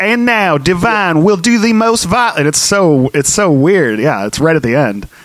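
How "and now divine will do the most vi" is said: over-the-top put-on Baltimore accent, pitched higher. Retelling a film's ending: over-the-top Baltimore accent as John Waters. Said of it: "really over-the-top Baltimore accent that he's doing".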